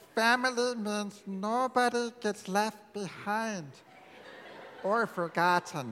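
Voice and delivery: put-on cartoon alien voice.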